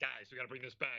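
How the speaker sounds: rallying, urging teammate tone. Retelling a player's call to the team: deep Kyle voice. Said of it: "in his deep Kyle voice".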